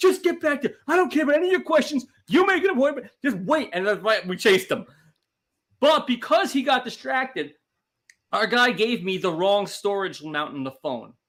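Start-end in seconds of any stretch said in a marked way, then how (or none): 0.0-3.7 mock, shrill, very high screaming. Retelling a phone store fight, imitating mom screaming at a customer. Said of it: "my mom is screaming at him".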